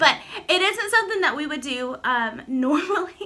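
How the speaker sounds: giggling, laughing through the words. Explaining a favorite date while the dog whines, laughing while talking. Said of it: "I keep laughing".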